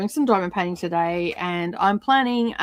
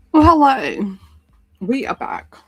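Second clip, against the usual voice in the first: loud speech through a mouthful of food; 4 semitones higher, 6 dB louder than usual. Greeting listeners on coming back, talking with a mouthful of biscuit. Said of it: "Me with a mouthful of biscuit".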